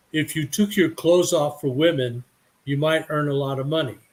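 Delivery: plain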